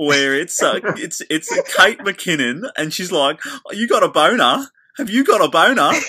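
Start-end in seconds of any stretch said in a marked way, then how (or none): 3.5-5.9 fake Australian accent, much higher and faster. Recalling the Saturday Night Live sketch accent: Kate McKinnon's fake Australian accent. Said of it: "fake Australian accent".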